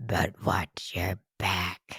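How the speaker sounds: deep, very low, drawn-out, slow demonic growl. Speaker finally does the demonic growl they had planned: deep demonic growl. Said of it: "I was going to do my demonic growl".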